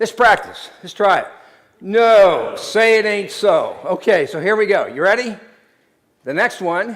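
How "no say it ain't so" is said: heavily sarcastic, louder and slower. Showing the audience how to respond, in the most sarcastic tone. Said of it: "respond with the most sarcastic".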